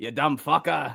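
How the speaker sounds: put-on Irish accent. Trading Irish accents, the speaker fires back an insult: put-on Irish accent. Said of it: "that was pretty good".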